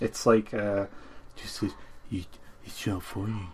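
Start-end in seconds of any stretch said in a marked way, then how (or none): 2.1-3.5 soft, hushed mock public-service voiceover. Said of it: "the voiceover is just, it's stupid".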